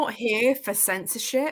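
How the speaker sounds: plain reading voice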